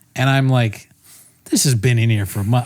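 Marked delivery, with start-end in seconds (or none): 1.4-2.6 mock angry, exasperated, fed-up outburst. Retelling finding an old cake in the work fridge: imitating past anger. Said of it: "I'm getting mad again".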